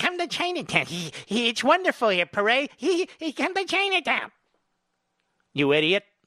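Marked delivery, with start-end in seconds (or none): 0.0-4.3 mocking put-on politician voice, pitched higher. Mimicking a politician inviting people to come to Chinatown: Nancy Pelosi voice. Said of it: "That's my Nancy Pelosi voice".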